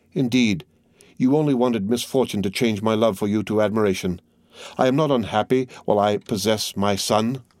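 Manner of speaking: plain reading voice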